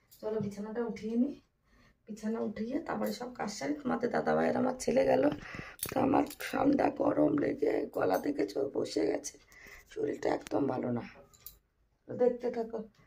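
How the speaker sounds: soft, hoarse voice. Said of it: "গলাটার অবস্থা এতটাই খারাপ".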